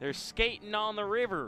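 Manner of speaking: put-on Southern accent. Repeating the other announcer's line as a joke: put-on accent that came out southern.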